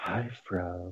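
very quiet, soft, intimate half-whisper. Retelling how someone greets the speaker online: imitating someone half-whispering. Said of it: "she whispers".

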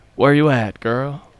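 bad put-on Southern accent, failing to sound smooth. Quoting a guy who tries to sound smooth but can't, failed smooth Southern accent. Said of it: "in a smooth, like, Texan accent or Southern accent, but he can't".

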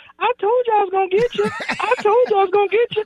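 high-pitched voice. Retelling what he said to the linebacker after the touchdown, high-pitched voice. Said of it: "but he had a high voice".

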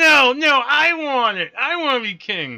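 high, nasal villain whine.

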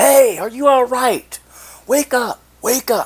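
very high, loud yelling. Speaker recounts trying to wake a stranger; retelling yelling at him. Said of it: "now I'm yelling".

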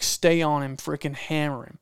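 ordinary talk

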